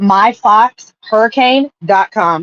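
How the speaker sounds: slow, deliberate, careful, unhurried repeat. Repeating a website address after being asked to say it slower. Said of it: "You need to say it a little slower".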